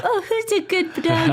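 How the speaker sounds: put-on high-pitched cooing baby talk.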